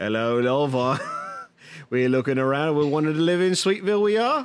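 put-on doofy, silly little Yorkshire accent. Speaker discussing a period show, imitating Matt Smith's doofy Yorkshire accent. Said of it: "his doofy little Yorkshire accent".

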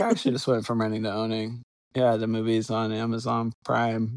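flat, expressionless deadpan delivery. Recounting telling a joke to a woman, the speaker retells it deadpan. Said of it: "I did it like deadpan".

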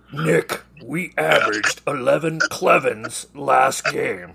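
comic puppet-style cartoon monster voice. Going over team stats, addressing Nick: Cookie Monster voice. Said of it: "Cookie Monster voice".

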